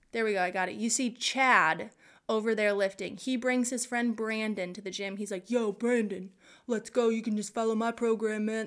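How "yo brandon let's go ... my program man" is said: put-on macho dude voice. Speaker acts out Chad inviting his friend Brandon to the gym: Chad man voice. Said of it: "That's a good man voice".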